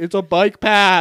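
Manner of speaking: very loud yell. Telling a story about a cyclist yelling back at a woman, retelling his yell. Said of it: "the guy on the bike yells back".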